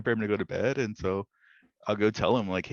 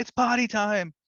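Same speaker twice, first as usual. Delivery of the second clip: play-acted very high child's hollering yell; 12 semitones higher, 4 dB louder than usual. Retelling how a child announces potty time: imitating a child yelling. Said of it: "he'll be yelling all over the house".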